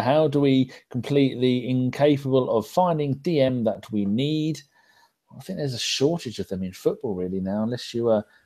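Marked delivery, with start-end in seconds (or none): none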